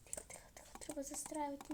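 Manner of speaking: soft, sneaky whispered voice.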